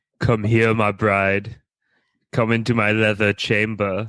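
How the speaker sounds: weird deep put-on character voice. Playing a bit with another person, speaking in a deep, weird voice. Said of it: "talking in that deep, weird voice".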